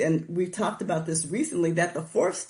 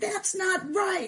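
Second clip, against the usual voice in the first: put-on enraged outburst, pitched way up; 14 semitones higher than usual. Retelling standing over the sponsor and raging at him: imitating own past raging. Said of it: "I'd be raging and standing over him saying".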